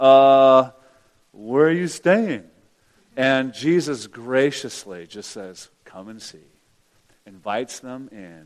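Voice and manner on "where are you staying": put-on stammering, much slower. Retelling a Bible story, voicing the curious followers answering Jesus, imitating stammering. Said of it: "I could just imagine them kind of stammering".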